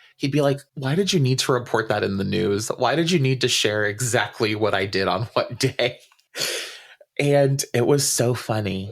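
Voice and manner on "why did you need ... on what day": usual speaking voice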